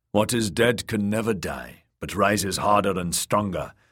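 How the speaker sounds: ordinary delivery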